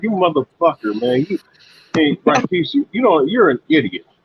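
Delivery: put-on angry ranting. Retelling how someone gets mad when Rakis comes in: imitating someone getting mad. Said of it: "he be getting mad".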